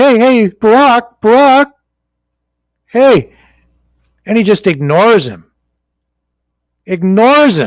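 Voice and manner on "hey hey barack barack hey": slow calling out, a touch high. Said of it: "He's like".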